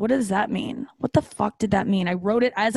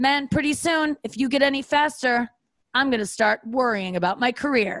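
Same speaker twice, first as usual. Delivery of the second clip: smug, condescending, patronising complimentary tone; 3 semitones higher than usual. Imitating Mo Farah's comment after a run: imitating Mo Farah being condescending. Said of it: "he's the one that did that".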